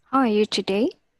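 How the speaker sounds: warm yet firm and certain. A voice coach demonstrates a practice line for a student: friendly but firm. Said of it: "you want to be friendly but firm".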